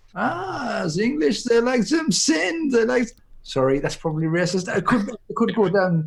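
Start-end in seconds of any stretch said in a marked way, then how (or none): 0.1-3.0 fake German accent, pitched up. Imagining what the German makers might think: put-on German accent. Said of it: "That was my German accent".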